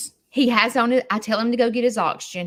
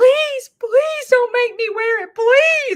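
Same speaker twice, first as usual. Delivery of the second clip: mock tearful, crying pleading, pitched way up, loud; 7 dB louder than usual. Retelling how Larry cried and begged in the parking lot: imitating crying begging. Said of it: "he starts crying and begging me".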